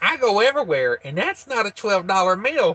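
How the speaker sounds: demanding, ranting, indignant complaining voice. Retelling a woman going off about a meal price at McDonald's, doing a Karen impression. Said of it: "I'm doing my impression of a Karen right now".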